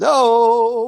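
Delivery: very high, loud, stretched-out drawn-out "hello". Retelling a man's voice heard in the house: imitating a guy saying hello. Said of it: "like this".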